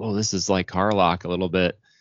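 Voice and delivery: ordinary talk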